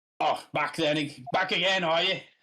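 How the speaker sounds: put-on Australian accent. Voicing the governor in the game: put-on australian accent. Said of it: "give him an Australian accent".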